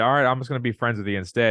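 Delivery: ordinary delivery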